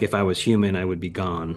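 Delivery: ordinary delivery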